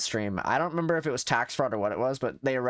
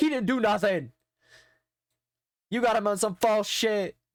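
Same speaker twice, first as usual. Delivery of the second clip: mock very high, tearful crying child voice; 9 semitones higher than usual. Imagining kids at the window crying at the police: imitating crying kids. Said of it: "just crying at him".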